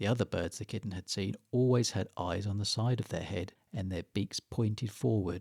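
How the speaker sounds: ordinary delivery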